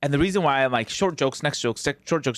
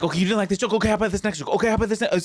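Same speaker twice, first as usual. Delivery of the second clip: frantic, high, scrambling, rattled-off comic delivery; 7 semitones higher than usual. Acting out own stage routine after a joke flops: imitating own frantic stage self. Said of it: "on stage, I'm, like, frantic".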